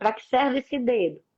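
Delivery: ordinary delivery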